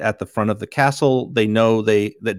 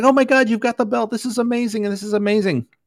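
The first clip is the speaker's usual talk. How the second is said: put-on gushing, very high, rushed excitement; 12 semitones higher than usual. Recapping the story for a listener, retelling Goma freaking out. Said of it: "he's all freaking out".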